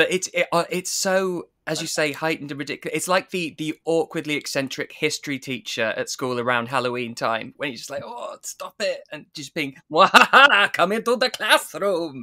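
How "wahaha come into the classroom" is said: put-on vampire accent, higher, louder, slower. A speaker imitates an eccentric history teacher at Halloween, doing a Dracula accent. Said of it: "doing his Dracula accent".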